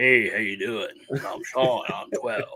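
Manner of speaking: fake deep, bassy voice, slow. Acting out introducing oneself at age twelve, in a deep voice. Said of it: "I spoke with a fake voice ... So I had to talk".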